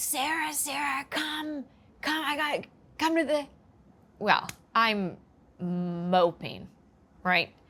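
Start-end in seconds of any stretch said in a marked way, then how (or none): 0.0-3.5 high, eager, excited yelling, words tumbling over. Retelling an excited parent calling from downstairs: imitating mom yelling excitedly.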